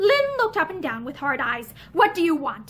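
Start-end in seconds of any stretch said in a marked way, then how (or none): 1.9-2.7 insistent, demanding tone. Lynn speaks to Matherson, who has come into his room, demanding. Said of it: "he demanded".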